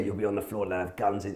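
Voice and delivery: hushed half-whisper under the breath. Retelling what a companion said passing metal detectors: imitating someone half-whispering. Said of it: "he's whispering to me".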